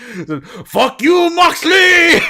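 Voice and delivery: put-on high shouted Japanese accent.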